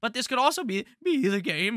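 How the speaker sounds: voice cracking suddenly mid-phrase. Ranking a running back for the week, voice cracking. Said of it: "Why the fuck did my voice just crack?".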